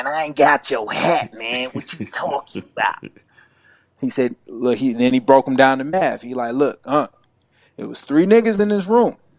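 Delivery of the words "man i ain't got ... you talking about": rough, raspy, dopey-sounding voice. Retelling how his uncle played dumb about a hat, imitating uncle's raspy voice. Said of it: "he got this raspy voice. He kind of talk like this".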